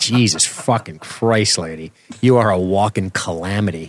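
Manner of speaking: normal talking voice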